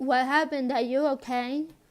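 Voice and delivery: put-on condescending tone with mock concern. Retelling how Mom greeted him when he got home, mock-condescending. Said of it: "in a condescending type way too".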